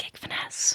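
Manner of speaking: soft whisper under the breath. Sharing the name of another booking service, whispered Gig Finesse. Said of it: "I'll whisper it to you".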